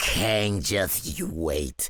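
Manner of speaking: mock growling, acted-out growled delivery. Acting out what another boy is thinking after a fight, imitating a growled threat.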